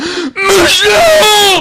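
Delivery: high, slow, anguished wailing cry.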